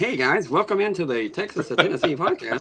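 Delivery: squeaky, extremely high-pitched voice. Speaker retells recording a podcast intro, imitating own high-pitched voice. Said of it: "My voice was extremely high pitched".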